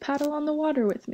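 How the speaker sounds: plain reading voice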